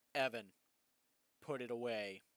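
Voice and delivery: mock booming, dead-serious, loud, very stern voice. Retelling a man stopping mid-talk to warn evan: retelling a stern warning. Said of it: "he goes in the most stern voice I've ever heard that man produce".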